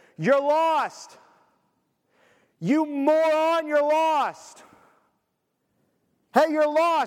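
high, very slow, stretched-out loud yelling. Acting out screaming from a rescue helicopter at a lost person: mock screaming at someone. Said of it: "flying around screaming at them".

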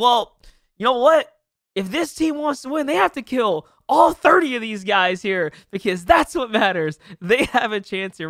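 play-acted, silly, sarcastic joking play-by-play. Caster re-enacting what he and his co-caster said on a cast, retelling sarcastic commentary. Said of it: "we kind of approach this with a whole sarcastic tone".

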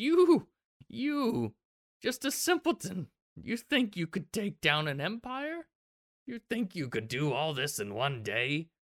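slow, swooping, cackling evil queen voice. Voicing a queen who cackles over a captured player: cackling villain queen. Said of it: "She kind of cackles over you".

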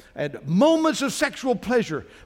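ordinary delivery

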